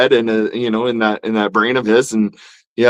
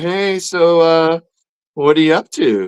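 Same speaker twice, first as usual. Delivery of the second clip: put-on woman's voice, higher pitch; 6 semitones higher than usual. Acting out an ex-girlfriend calling you up: playing an ex-girlfriend calling up. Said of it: "that's the ex-girlfriend calling you up going".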